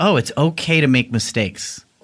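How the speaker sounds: usual speaking voice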